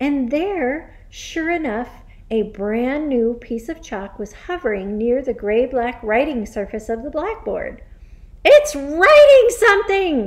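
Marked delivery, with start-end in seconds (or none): 8.4-10.3 very high, very loud, shrill hysterical shriek. Seeing a piece of chalk hovering at the blackboard, someone screams:. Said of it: "screamed Nigel".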